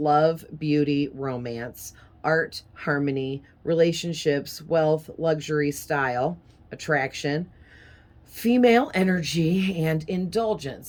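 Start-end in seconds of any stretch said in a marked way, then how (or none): none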